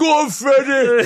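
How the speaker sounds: shrill, very loud, high full-volume cheer. Retelling a heckle from the crowd during a kiss: imitating Kevin Kennedy shouting. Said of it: "He's him shouting out".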